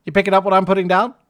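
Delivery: rattled off very fast and very loud. Told a sound is too long, speaker says the phrase quickly. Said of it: "I'll say it quickly".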